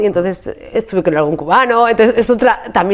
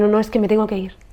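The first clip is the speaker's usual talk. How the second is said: put-on tearful voice, quieter; 5 dB quieter than usual. Retelling the reply to the mother the night before leaving: retelling own crying. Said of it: "Pero llorando".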